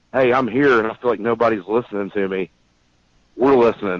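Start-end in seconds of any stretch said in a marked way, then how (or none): none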